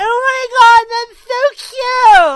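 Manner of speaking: put-on very high, very loud valley-girl schoolgirl gush. Imitating a group of schoolgirls reacting to something: girly schoolgirl voice. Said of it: "that voice has come to me over time".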